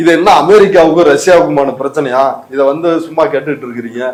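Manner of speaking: ordinary talk, nothing marked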